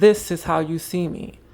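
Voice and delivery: ordinary talk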